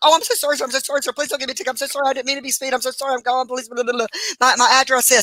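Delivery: panicked, rushed, apologetic, frantic pleading. Retelling jumping out of the car to beg an officer: imitating frantic pleading. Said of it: "Calm down, ma'am. Calm down, calm down".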